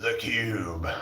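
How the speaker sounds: very soft, deep, low, hushed game show voice. Recalling the voice on a game show with challenges, The Cube game show voice. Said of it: "there was this like voice on there that goes".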